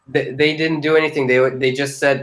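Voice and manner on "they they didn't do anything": normal talking voice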